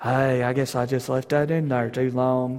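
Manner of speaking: totally unbothered, calm, unhurried tone. Making fun of a man by imitating how he talks: calm, no urgency. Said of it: "just actually kind of talks like this".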